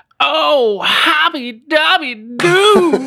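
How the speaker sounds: very high, loud, shrill cry belted out. Asked by a co-host to imitate a commentator's saying: Goldstein commentator impression. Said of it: "kan inte du bara härma honom".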